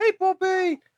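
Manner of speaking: very high-pitched, cooing kitty voice. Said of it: "they do the kitty voice".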